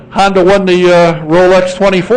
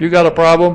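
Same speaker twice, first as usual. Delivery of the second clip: ordinary talk, nothing marked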